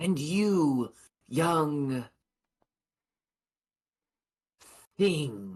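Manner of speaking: condescending. She asks a young challenger which test to take, speaking disdainfully. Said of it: "She says it with a kind of disdain".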